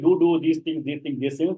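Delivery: normal talking voice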